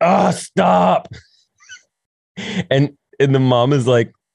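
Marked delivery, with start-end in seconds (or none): 0.0-1.1 high, rough, furious, fed-up acted teen voice. Retelling a daughter's reaction to her mom's compliments: imitating a furious teen. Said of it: "And it makes her furious".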